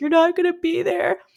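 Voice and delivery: sobbing cry pitched very high, tearful. Retelling a phone call before the birth, acting out the speaker's own sobbing. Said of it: "I started sobbing".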